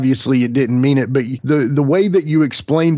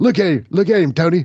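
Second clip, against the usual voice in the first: put-on excited commentator voice, higher; 5 semitones higher than usual. Imitating a commentator calling a slow-motion replay: David Crockett impression. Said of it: "That's my David Crockett impression".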